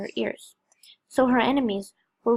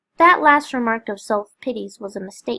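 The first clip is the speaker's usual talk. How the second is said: plain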